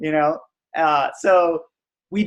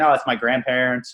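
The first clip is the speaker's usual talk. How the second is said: ordinary talk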